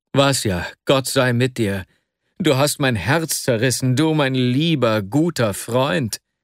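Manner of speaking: ordinary delivery, nothing marked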